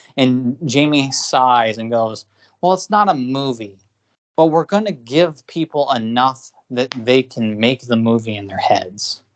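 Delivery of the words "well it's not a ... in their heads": usual speaking voice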